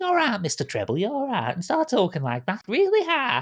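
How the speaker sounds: put-on sing-song, slight Yorkshire and Lancashire accent. Recalling how they voiced a tricksy satyr character: slightly yorkshire, slightly lancashire accent. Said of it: "slightly Yorkshire, slightly Lancashire accent".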